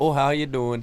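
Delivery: bad, high-pitched, loud, mock Ohio accent.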